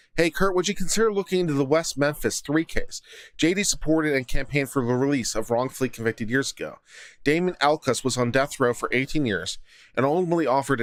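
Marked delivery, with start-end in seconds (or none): none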